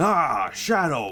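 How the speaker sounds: high, projected voice. Voicing a doctor character meeting another character: Eggman voice. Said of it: "I can't do an Eggman voice".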